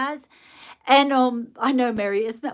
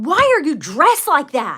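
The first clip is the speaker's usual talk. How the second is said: raised, almost angry, accusing tone; 4 semitones higher, 8 dB louder than usual. Retelling what a lady on the porch said: imitating someone almost mad. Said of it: "almost mad at me".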